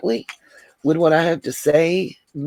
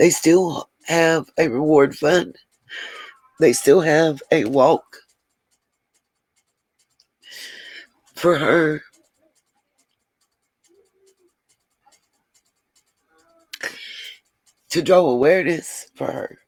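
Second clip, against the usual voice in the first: emotional, moved, swooping voice. Speaker describes a missing child case that hit close to home, getting emotional. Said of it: "sorry, I get emotional".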